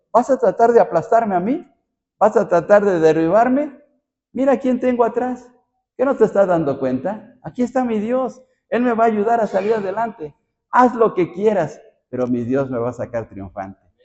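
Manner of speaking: wry, ironic, defiant, taunting tone. A speaker explains how David answers his enemy, voicing David with irony. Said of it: "con iran, ira, ironía, como diciendo".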